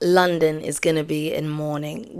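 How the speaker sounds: plain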